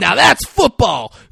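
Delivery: very loud, ragged, rough, wild, high bellow. Retelling what he yelled after hitting the quarterback, retelling a yell. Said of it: "And yells".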